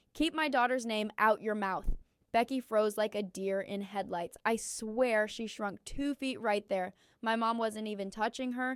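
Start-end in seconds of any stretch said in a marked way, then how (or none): none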